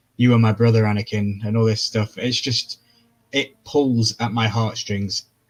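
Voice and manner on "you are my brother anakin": ordinary talk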